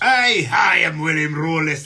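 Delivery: exaggerated fake Scottish accent. Mocking the Hollywood Scottish a casting director expected, over-exaggerated Hollywood Scottish accent. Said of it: "the over exaggerated".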